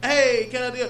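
put-on Mexican accent. Retelling what this funny fella would say, in a stereotypical Mexican accent. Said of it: "Mexican accent".

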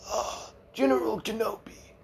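badly pitched, very high voice. Retelling a movie scene where Grievous answers Obi-Wan: bad Grievous impression. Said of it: "really bad Grievous impression".

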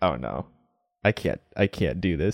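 ordinary talk, nothing marked

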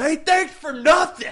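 put-on, very high, shrill, loud yell. Retelling a waiter yelling after someone walking away, retelling a waiter's yell. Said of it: "And he yells".

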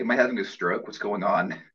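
ordinary delivery

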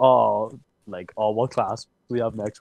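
ordinary talk, nothing marked

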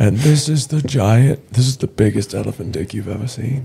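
wildlife documentary narrator voice. Asked for an Attenborough impression, performing it: David Attenborough impression. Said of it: "Give us your best Attenborough".

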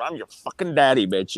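put-on voice, getting mad, angry outburst. Retelling how someone got mad and jumped into a fight: imitating someone getting mad. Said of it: "he gets mad and he goes".

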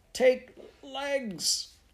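very high sputtering, stretched and drawn out. Prue and Mary Jo drag Miss Brooke from a burning house; sputtering. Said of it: "sputtered Prue".

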